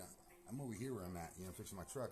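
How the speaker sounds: plain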